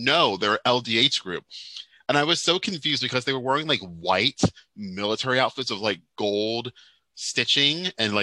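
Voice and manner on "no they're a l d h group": normal talking voice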